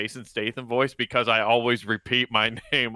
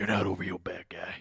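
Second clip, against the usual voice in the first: low, hushed, brooding hero voice; 5 semitones lower, 8 dB quieter than usual. Mid-impression, addressing the bad guy and slipping into Batman voice. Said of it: "I don't know why I went Batman there".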